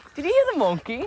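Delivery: very high, very loud, shrill, booming put-on English accent. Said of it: "talk in a British accent".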